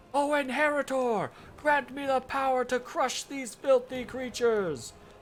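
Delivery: mock bold heroic battle cry, big, pitched high. Retelling grabbing the sword to fight goblins, retelling a big tough yell. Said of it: "I yell in my big tough voice".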